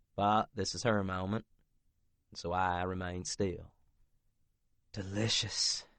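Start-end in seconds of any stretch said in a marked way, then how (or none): 4.9-5.8 breathy, breathed out. Reading a story aloud, a character touching the narrator: breathy. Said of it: "she breathes".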